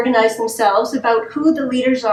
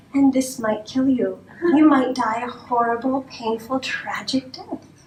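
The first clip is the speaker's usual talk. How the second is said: sweet, lovely, pleasant sales voice; 4 dB quieter than usual. Demonstrating how drug ads deliver their deadly warnings, lovely tone of voice. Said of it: "in a lovely tone of voice we say".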